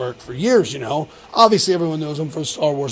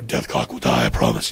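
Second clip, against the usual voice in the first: hoarse, put-on masked assassin character voice. Showing another speaker the masked assassin voice on request: masked assassin character voice. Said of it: "Can you do it now?".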